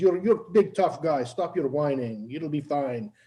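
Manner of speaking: put-on, heavy, thick South American accent, laid on. Retelling how a man made fun of the scared speaker, thick South American accent. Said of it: "he had a very thick accent".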